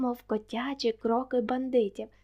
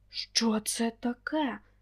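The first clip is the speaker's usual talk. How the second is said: rough, husky, raspy hoarse voice. One of three men with daggers, startled by a noise at the door; hoarse voice. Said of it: "запитав Віктор хриплим голосом".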